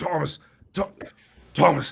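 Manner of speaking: very loud coughing fit. Telling about a phone call, the speaker acts out the caller: imitating a coughing fit. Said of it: "randomly he just starts coughing uncontrollably".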